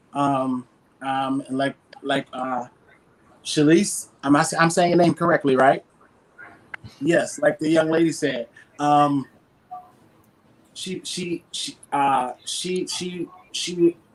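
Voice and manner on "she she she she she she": very slow, halting, nervous stammer with stumbling repeats. Speaking to the audience about what a young lady said, nervous stammering. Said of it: "I'm just getting nervous".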